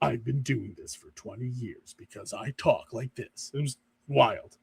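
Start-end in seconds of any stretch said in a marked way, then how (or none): 0.0-3.5 drawn-out, slow, whispered, breathy movie-trailer announcer voice. Retelling an interview with the trailer guy: imitating the movie trailer announcer. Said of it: "He's like".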